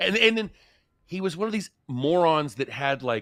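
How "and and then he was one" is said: plain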